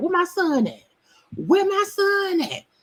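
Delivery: put-on shrill, brash, loud hollering mother voice. Retelling a scene, imitating a mother loudly calling for her son. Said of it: "Had his mama come in all loud".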